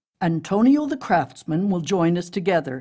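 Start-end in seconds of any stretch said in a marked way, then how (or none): none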